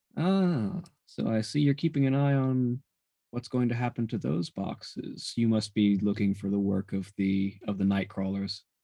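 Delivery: deep lilting feminine voice. Narrator voicing someone suddenly at a player's shoulder, deep lilting feminine voice. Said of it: "a feminine voice, very sort of deep and lilting".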